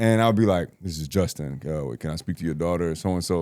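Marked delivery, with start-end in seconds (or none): 0.8-2.9 lowered, low-pitched voice, quieter. As a twelve-year-old phoning, answering a parent asking who this is: lowered voice. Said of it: "I was lowering my voice".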